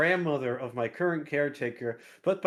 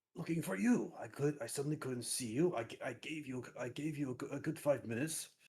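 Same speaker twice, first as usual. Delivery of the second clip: very quiet, hushed half-whisper; 11 dB quieter than usual. Player in character answering another character hiding in the shadows: half-whispering. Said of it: "also whispering".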